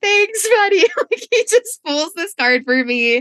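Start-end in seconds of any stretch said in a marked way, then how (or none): 0.0-2.1 play-acted sobbing, tearful, very high crying voice. Speaker retells thanking him for pulling a card, acting out crying. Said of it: "I just start crying like even harder".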